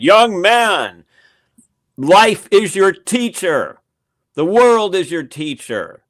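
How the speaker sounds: loud, slow, swooping voice. Retelling a rare moment when Manly Hall answered a young man, imitating Manly Hall raising his voice. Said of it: "raised his voice".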